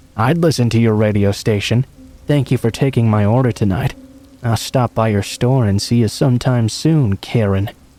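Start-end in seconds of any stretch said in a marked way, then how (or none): none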